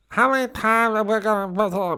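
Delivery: mumbled, pitched high and drawn out. Speaker describes an actor strolling onto set, then: bad Marlon Brando impression. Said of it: "he would just sort of mumble in".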